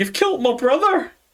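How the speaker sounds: very high, tearful sobbing. Voicing a weeping enemy accusing the party: crying, accusing. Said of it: "He's just gonna start crying, saying".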